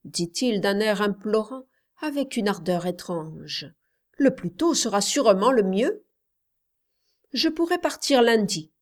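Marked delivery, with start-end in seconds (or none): 7.3-8.6 brusque, short, abrupt, pitched up. Reading a story, she answers the man's question: abrupt. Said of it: "dit-elle brusquement".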